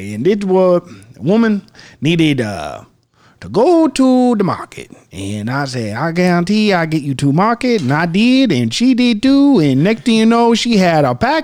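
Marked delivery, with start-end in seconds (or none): 0.0-9.6 put-on Cajun accent, higher. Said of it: "craziest Cajun accent".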